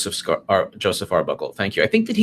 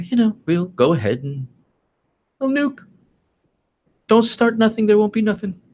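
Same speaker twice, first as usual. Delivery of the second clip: put-on English accent, pitched very high; 11 semitones higher than usual. Imitating Theresa May's reply about nukes: Theresa May English accent. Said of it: "in her beautiful English accent".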